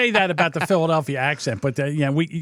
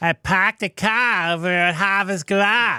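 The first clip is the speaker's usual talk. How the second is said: put-on Boston accent with dropped Rs; 4 semitones higher than usual. Explaining how the Long Island accent resembles Boston's: Boston accent, R becomes H. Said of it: "where R becomes H".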